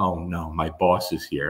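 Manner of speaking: put-on soft, slow, nervous and uneasy murmur. Retelling a woman's reaction on seeing her boss, imitating someone getting nervous. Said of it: "Stephanie gets all nervous".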